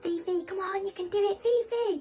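put-on very high, tearful crying shout. Retelling how she shouted to her drowning dog, reenacting screaming at her. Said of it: "I'm just screaming at her, like shouting like".

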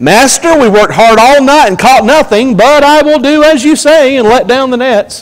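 doubtful, grudging tone. Acting out how Peter answers Jesus about the nets: Peter's doubtful tone. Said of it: "I imagine it like this".

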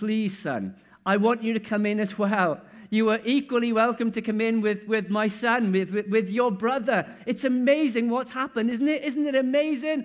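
acted-out, begging, pleading voice. Acting out the father begging his elder son to come in: father pleading. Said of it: "the father is pleading with".

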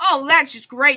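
sarcastic tone, meaning the opposite. Low on food in the game, a player answers a teammate in a sarcastic tone. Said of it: "it's called sarcasm".

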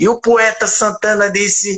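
slow, drawn-out, high announcer voice. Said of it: "eu digo".

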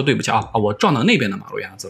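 ordinary delivery

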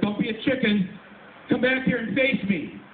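loud shout. Retelling calling after a man who kept walking away: retelling a shout. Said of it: "I shouted louder".

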